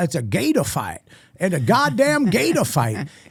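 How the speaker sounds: swooping, sing-song comedic character voice. Retelling a friend's voice bit from stage: imitating Dan Soda's voice. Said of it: "this voice".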